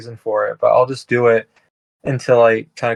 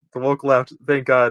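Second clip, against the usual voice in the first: usual speaking voice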